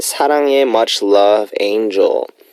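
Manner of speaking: ordinary talk, nothing marked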